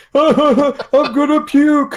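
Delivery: very high, loud yell through laughter. Recalling laughing hard at a video game, retelling a yell. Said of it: "Because I was yelling".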